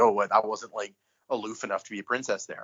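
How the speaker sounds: normal talking voice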